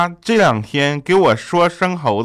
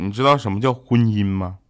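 usual speaking voice

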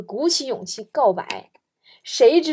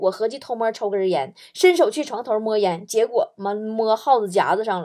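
plain

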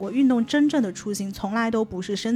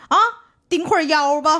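put-on speaking with a Sichuan accent; 5 semitones higher, 5 dB louder than usual. Recounting today's teacher giving a class instruction, Sichuan accent. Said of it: "今天我们那个老师是一个四川口音".

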